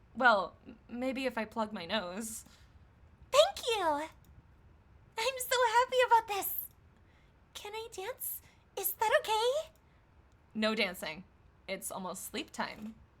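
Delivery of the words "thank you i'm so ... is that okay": put-on very high-pitched girlish character voice. Reading her lines aloud in a scene: female character's voice. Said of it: "read in her voice".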